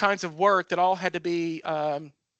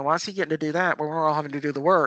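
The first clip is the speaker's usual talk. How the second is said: whispered. Retelling what others in the section said: imitating coworkers whispering. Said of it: "kinda whispering".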